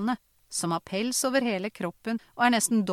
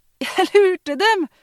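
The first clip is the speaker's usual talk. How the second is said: very loud, high, shrill, breathless, winded yell; 10 semitones higher, 11 dB louder than usual. Narrating the boy calling out as he runs down the hill; breathless shout. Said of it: "ropte gutten kortpustet".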